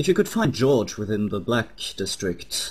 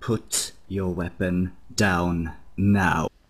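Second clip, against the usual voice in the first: menacing, slow, deliberate, intimidating delivery; 3 semitones lower than usual. Voicing a character grabbing another by the collar: intimidating command. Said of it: "stare into his eyes intently".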